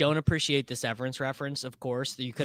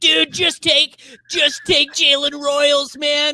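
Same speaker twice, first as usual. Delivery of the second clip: mock screaming, higher and louder; 13 semitones higher, 8 dB louder than usual. Retelling a draft where the old self is screaming: imitating past self screaming. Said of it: "old me is interstellar screaming".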